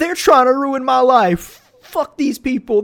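mock very high, blubbering baby wail. Mocking a man kicked off a flight, imitating him crying like a baby. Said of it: "literally crying like a baby".

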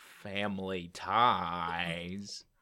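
put-on slow Southern drawl. Trying out a voice after hearing about the show: Forrest Gump voice. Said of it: "another Forrest Gump impression".

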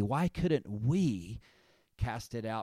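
heavy stress on the word "we". Reading a verse aloud to highlight one word, stress on we. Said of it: "I want to put the emphasis on the word we".

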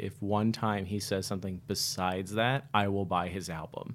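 ordinary delivery

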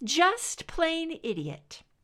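high teasing voice. Narrating Scully answering Mulder, in her best big sister voice. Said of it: "she said in her best big sister voice".

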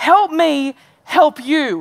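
impassioned, earnest pleading tone. Retelling a film scene where he tries to help a cocky football player, imitating an impassioned Tom Cruise. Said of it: "he's saying impassionately".

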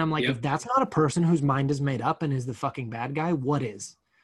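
ordinary talk, nothing marked

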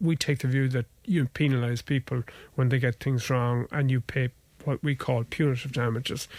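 ordinary talk

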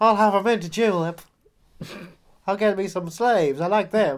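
put-on Southern accent. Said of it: "I'm going all Southern".

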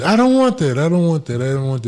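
acted, half-shouted mild yell, repeated over and over. Retelling how a tourist reacted to shackles: imitating a man screaming.

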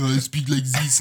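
speaking with French accent. Showing what a French accent sounds like: put-on French accent. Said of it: "If I do a French accent".

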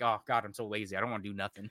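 ordinary talk, nothing marked

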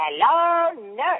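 very high, cartoony voice. Answering which voice fans ask for most: Yakko voice. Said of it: "if they wanna hear Yakko say".

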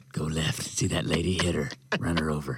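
low, evil, sinister horse voice. As the evil horse sitting in the back seat, evil horse voice. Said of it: "It's the evil horse sitting in the back seat".

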